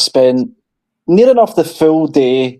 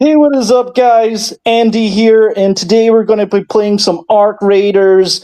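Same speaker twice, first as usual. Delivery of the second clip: put-on pitched-up American accent; 8 semitones higher than usual. Asked if he can do an American accent, a put-on American accent. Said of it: "can you do an American accent?".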